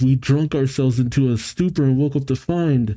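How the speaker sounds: plain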